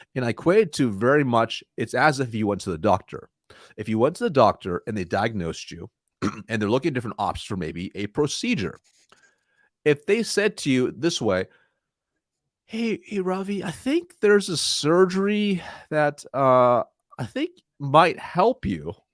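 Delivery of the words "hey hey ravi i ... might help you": high, slow, hesitant, unconfident delivery. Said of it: "one doctor is way more confident".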